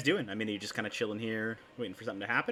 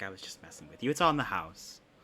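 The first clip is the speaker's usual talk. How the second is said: mock-joking tone, lower pitch; 2 semitones lower than usual. Retelling what a man said to him about paying: retelling a joking reply. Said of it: "he like jokingly like waves his hand".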